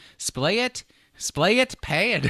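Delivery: put-on Irish accent. Joking about reading a product name aloud: mock Irish accent. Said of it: "can you imagine that with an Irish accent?".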